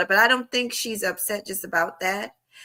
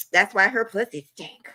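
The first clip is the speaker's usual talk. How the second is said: ordinary delivery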